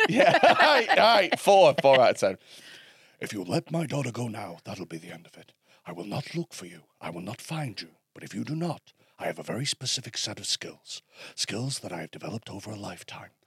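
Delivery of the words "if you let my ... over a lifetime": very low, very quiet, deep hushed murmur. After hyping it up to the group, the speaker does a Liam Neeson impression. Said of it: "So I can do Liam Neeson".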